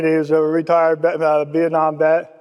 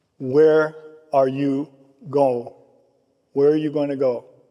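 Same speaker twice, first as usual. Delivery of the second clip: put-on kind, caring, loving tone; 2 semitones lower than usual. Retelling what a recovering biker said to you, imitating a kind, loving tone. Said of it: "he said it with such a kindness and such a love".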